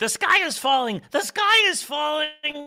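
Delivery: high, loud, slow squeaking voice. Giving proof of who they are: Chicken Little impression. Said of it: "my Chicken Little impression".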